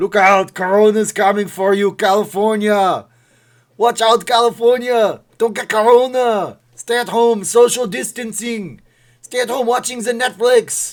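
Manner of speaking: booming, shrill, very loud, high put-on Austrian accent. Showing off a bit about Corona, warn California in an Arnold Schwarzenegger impression. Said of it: "when I do an Arnold Schwarzenegger impression".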